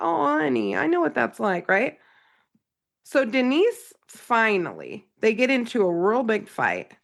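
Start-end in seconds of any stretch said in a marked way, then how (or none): 0.0-2.0 comforting tone through laughter, higher pitch.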